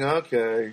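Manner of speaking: okay said flat and low, unimpressed and disappointed. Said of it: "if it wasn't good, it'd be like".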